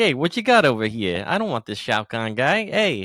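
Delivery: loud, high, put-on New York Brooklyn accent. Retelling how an Australian actor talks in a movie scene, Brooklyn accent. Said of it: "He goes all all kind of like Brooklyn".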